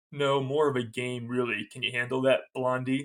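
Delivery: ordinary delivery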